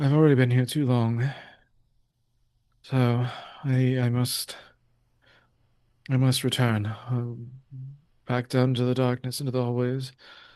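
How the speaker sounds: put-on fatigued, weary, tired voice. Quoting the man behind the mirror's words aloud: retelling a fatigued voice. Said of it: "fatigue creep in the man behind the mirror's voice".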